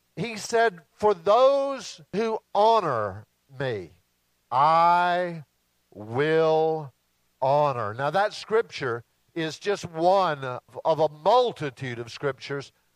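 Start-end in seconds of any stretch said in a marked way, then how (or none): 0.9-7.9 slow, weighty, drawn-out solemn reading. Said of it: "read that again very slowly".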